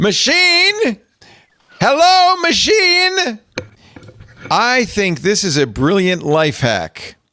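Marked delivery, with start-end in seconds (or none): 0.0-3.4 acted-out shout, very high and loud. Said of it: "I like the loud voice you use to talk to the phone".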